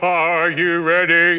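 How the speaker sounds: big, ominous, booming, loud storyteller voice. Speaker recreates Frank telling a ghost story's death angel line, in Frank's booming voice. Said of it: "Frank had a booming voice".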